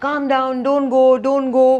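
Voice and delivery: high pleading. The speaker mocks how the listener begged a man not to leave, mock begging. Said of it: "You started begging".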